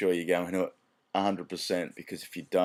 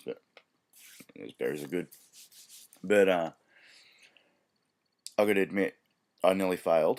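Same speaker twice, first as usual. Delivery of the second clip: talking while eating, mouth full, slower. Recording a talk while eating berries, talking while eating. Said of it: "Sorry for eating while I'm doing this".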